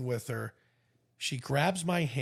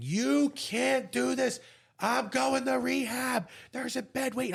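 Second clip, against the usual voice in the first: mock very high, shrill shrieking and screaming; 10 semitones higher than usual. Recalling being taken off the plane on his way to rehab, retelling his own screaming. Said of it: "I'm screaming".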